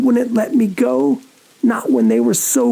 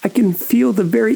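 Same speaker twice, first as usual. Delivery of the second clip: ordinary delivery, nothing marked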